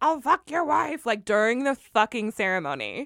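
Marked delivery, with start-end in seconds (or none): 0.0-1.1 loud crude holler, raised pitch. Describing men near a wedding ceremony in Philly, retelling men screaming. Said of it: "men were literally screaming like".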